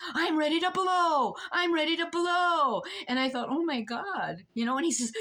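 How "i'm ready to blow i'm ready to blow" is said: hollered, high, drawn-out yelling outburst, repeated. Recounting a court commissioner yelling at them in court, retelling a yell. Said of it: "And he's yelling at me".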